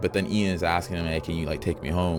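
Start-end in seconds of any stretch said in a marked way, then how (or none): none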